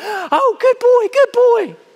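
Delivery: very high, very slow, silly, drawn-out praising tone. Speaker demonstrates praising a dog, in a raised silly voice. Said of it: "You raise your voice into silly connotations".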